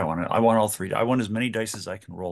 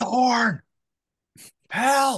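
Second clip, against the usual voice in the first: piercing high-pitched scream; 14 semitones higher, 3 dB louder than usual. A player's character calls into the walkie-talkie on her jacket: screaming for help. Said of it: "I'm just screaming".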